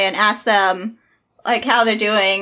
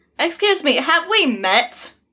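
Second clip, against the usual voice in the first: irritated, annoyed, pointed, pitched-up; 6 semitones higher than usual. Player speaking in character to Tony, annoyed. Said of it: "really like annoyed".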